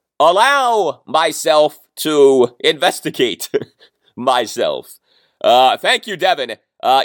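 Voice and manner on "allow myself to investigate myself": British spy-movie hero character voice. Imagining Dan Snyder deciding to investigate the accusations, in an Austin Powers voice. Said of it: "with an austin powers voice".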